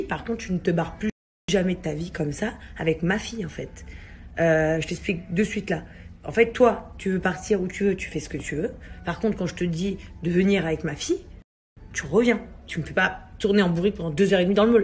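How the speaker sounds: usual speaking voice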